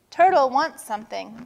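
ordinary talk

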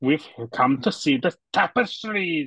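put-on really thick, heavy, laid-on Scottish accent. Quoting a remembered scene from memory, in a thick Scottish accent. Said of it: "he does that Scottish accent, like really thick".

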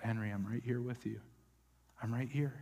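hushed, quiet, reassuring half-whisper, repeated. Retelling soothing an upset child named Henry: imitating a half-whisper. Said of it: "you just whisper every time he got upset".

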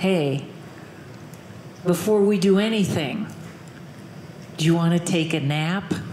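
low, sultry, seductive come-hither voice. The speaker tells women how to seduce a man over forty: sexiest voice. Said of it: "in your sexiest voice say".

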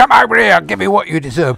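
blunt, loud, rough-edged thuggish shout. Showing menace done wrong, as loud evil: loud thuggish threat. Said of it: "that's thuggery".

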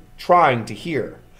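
ordinary delivery

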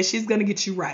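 plain

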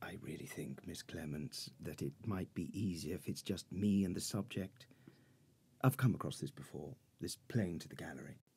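low, hushed whisper. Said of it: "What are you whispering about?".

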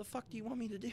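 very high, exasperated, mock-protesting tone.

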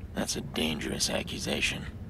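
gravelly low vigilante voice.

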